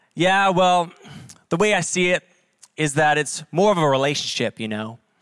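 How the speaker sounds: put-on strong, thick, deep Southern US accent. Retelling a film character's reply: imitating a deep southern accent. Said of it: "with a deep Southern accent".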